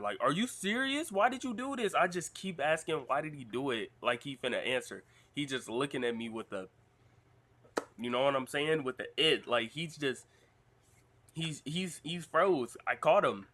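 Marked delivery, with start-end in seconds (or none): 0.2-1.9 put-on kid's yell, very high and climbing. Recalling yelling at someone as a little kid who wouldn't answer: retelling own yelling. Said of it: "when I'm yelling at somebody".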